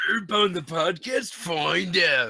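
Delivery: put-on high-energy voice. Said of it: "fake [name] voice".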